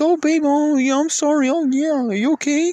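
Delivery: very high, meek pushover voice. Explaining how to set tones early, the speaker is mocking a soft man.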